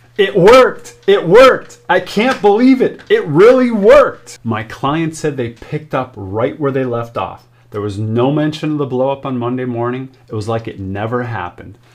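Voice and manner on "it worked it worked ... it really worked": high, loud, ecstatic excited screaming. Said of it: "my client calls me screaming on the phone".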